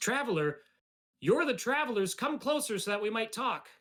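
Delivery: very high-pitched female character voice. Voicing a stranger who calls travelers closer: woman's voice. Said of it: "the voice that responds, uh, is a woman's voice".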